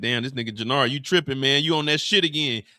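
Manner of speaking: reproachful, scolding telling-off tone. Retelling how Raheem looked at Jannard: imitating Raheem scolding. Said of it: "Raheem is looking at him like".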